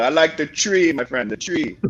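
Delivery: mock put-on Jamaican accent. Picking a horse for the race, saying it as in Jamaica: put-on Jamaican accent. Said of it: "Or in Jamaica".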